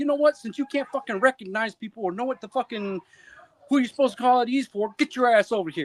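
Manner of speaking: high, furious, ranting angry tirade. Retelling flipping out on a soldier: retelling a furious rant. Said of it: "I flip the fuck out on Bates".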